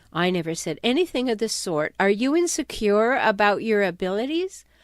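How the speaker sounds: ordinary talk, nothing marked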